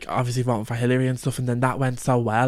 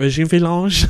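put-on French accent; 5 semitones higher, 8 dB louder than usual. Recalling a TV episode's made-up caller name, Regina Falange French accent. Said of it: "she did it in the French accent".

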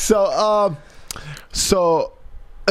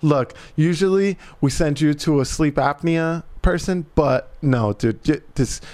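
usual speaking voice

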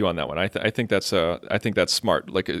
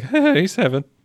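put-on nervous voice with cracking pitch; 11 semitones higher, 4 dB louder than usual. Acting out a nervous Wesley stumbling around her: imitating Wesley's cracking nervous voice. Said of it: "Just like that in that voice, he cracks".

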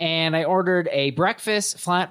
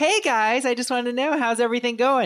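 mock over-bright, super bubbly, pitched-up voice; 7 semitones higher than usual. Retelling a restaurant manager checking on the table: imitating a bubbly manager. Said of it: "super bubbly".

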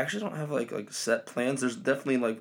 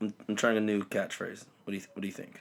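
usual speaking voice

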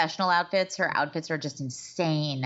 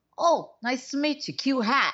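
put-on New York accent, pitched higher; 6 semitones higher than usual. Imitating how an actor met in New York talks: imitating Matthew Modine's New York voice. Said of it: "Matthew Modine was like".

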